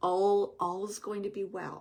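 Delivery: very gentle, comforting voice. Acting out how he reassures you that all will be well: imitating a gentle voice. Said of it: "in a very like gentle voice".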